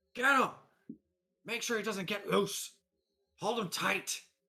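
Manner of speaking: loud, rough, gruff, barked shout, pitched very high. Voicing a guy outside shouting orders to grab someone: gruff voice. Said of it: "a gruff voice just going".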